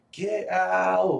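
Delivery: high, loud scream.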